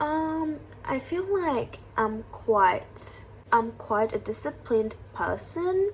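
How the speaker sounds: slow, hesitant, doubtful, faltering delivery. Showing an answer to 'what are your strengths?' that sounds unsure, hesitant. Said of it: "you don't even sound sure about".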